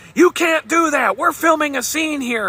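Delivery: put-on yelling. Retelling how the film director yelled at the speaker's boss, retelling a yell. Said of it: "starts yelling at my boss saying".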